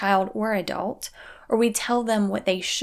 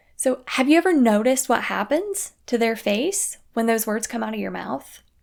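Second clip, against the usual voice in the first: ordinary talk, nothing marked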